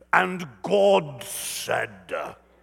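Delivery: holy, reverent, solemn reading voice. Speaker showing how people read the Bible aloud, in a solemn spiritual voice. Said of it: "here's how we read the Bible".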